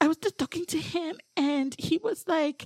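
put-on accent that sounds Filipino. Quoting what a woman said about a man, in an accent that sounds filipino. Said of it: "you sound Filipino".

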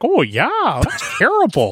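very high, drawn-out, swooping voice. Imitating Jordan Peterson's accent for the others: Jordan Peterson impression. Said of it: "that's totally his accent right there".

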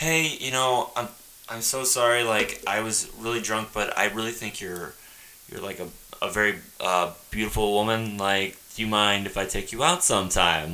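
courteous, very nice, sweet-natured tone. Retelling own past words asking a woman out: imitating a very nice apology. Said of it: "the very nice".

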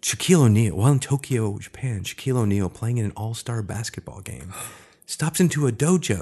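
put-on storyteller narration voice. Telling a story about Shaq in Tokyo, switching into a narrator voice. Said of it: "Do a narrator voice".

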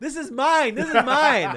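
very high, loud shouting. Retelling how someone shouted from his mixer: imitating someone shouting. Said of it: "he shouts from his, his, um, mixer".

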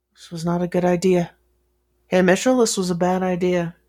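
very quiet, hushed muttering under the breath. Left alone in the room, a man speaks very quietly to himself. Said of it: "He says very quietly to himself".

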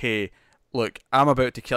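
plain

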